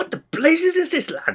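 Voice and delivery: squeaky, very high-pitched character outburst. Quoting a favourite line from an episode: Scotty impression. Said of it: "when he has a drink, and he goes".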